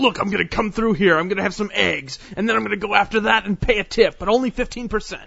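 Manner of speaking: intense, wound-up, full-on podcaster voice. Imitating someone described as intense while asking about him: imitating intense Scott Ziegler. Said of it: "is he, like, intense like that all the time?".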